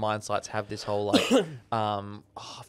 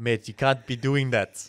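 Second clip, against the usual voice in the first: bad, failed, put-on South African accent; 4 dB louder than usual. Retelling a south african man's warning, using a bad south african accent. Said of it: "That is not a South African accent either".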